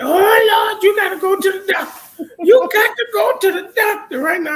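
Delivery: very high, loud, shrill panicked voice. Retelling how the mother reacted to the speaker: imitating mom's panic. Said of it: "started panicking".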